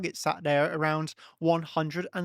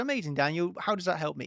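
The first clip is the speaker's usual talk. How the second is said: play-acted sarcastic, mocking, unimpressed tone. Speaker imagines how a listener will respond: imitating a sarcastic listener. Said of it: "you will say in a sarcastic voice".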